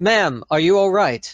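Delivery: urgent, worried, loud, high calling out.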